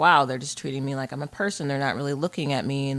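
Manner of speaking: normal talking voice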